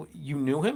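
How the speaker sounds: normal talking voice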